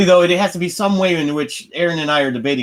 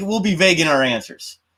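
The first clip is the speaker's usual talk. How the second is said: ordinary talk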